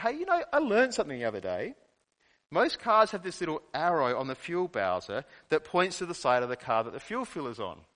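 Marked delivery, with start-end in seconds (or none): none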